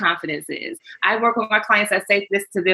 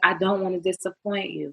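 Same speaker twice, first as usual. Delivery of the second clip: put-on tearful voice, quieter; 5 dB quieter than usual. Retelling a husband's words before the wedding: imitating someone speaking tearfully. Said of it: "through tearful eyes".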